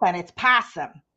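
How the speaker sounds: possum said with a Chicago accent. Saying the acronym's name aloud as a word: chicago accent. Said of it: "in my Chicago accent".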